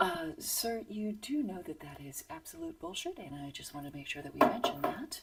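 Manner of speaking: hushed, very quiet, soft and gentle delivery. Doing an impression of moderators politely fact-checking, very quiet, gentle. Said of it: "This is my impression of the moder- moderators. ... just very quietly".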